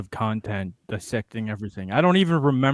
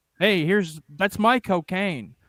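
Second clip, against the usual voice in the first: higher-pitched, put-on American accent; 9 semitones higher than usual. Joking about how a name sounds, said in an American accent. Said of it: "say it in American".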